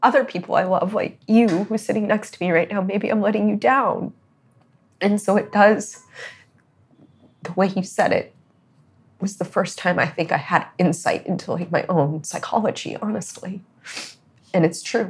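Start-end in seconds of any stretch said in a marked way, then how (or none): 5.0-15.1 speaking through tears in a tearful, crying voice. Talking to the person sitting next to them: crying. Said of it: "that's why I'm crying".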